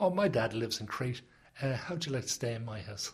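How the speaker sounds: ordinary talk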